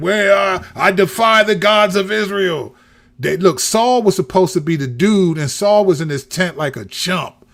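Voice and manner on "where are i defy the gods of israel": drawn-out, slow, mild half-yell. Retelling the David and Goliath story, imitating Goliath yelling.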